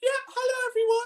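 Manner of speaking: put-on very high, girlish teenage-girl voice. Showing how the speaker's own voice came out on the test, high teenage-girl voice. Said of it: "mine came out like the equivalent of a teenage girl".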